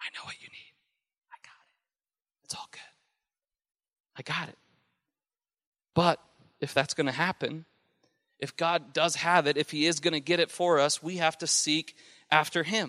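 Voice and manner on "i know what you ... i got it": very quiet, hushed whisper on the breath. Speaking to listeners, the speaker voices God's words, whispering as God. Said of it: "you could hear God whisper that to you".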